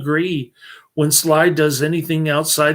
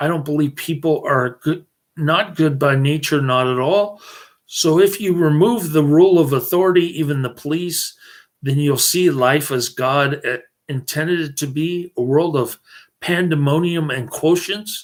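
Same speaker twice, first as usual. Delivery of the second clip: ordinary talk, nothing marked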